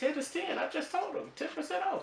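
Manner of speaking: high-pitched commercial announcer voice. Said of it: "I did the commercial".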